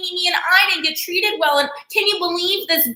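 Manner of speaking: high, needy, whiny voice. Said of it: "so whiny, so needy".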